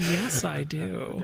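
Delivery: put-on smug voice. Retelling how he answered her excited question: imitating a smug reply. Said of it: "Very smug".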